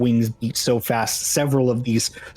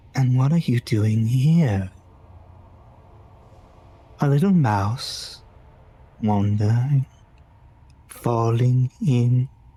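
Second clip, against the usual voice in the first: gentle, soothing, calming voice. Game master voicing a voice the player's character hears: soft, soothing voice. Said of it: "you hear a soft, soothing voice".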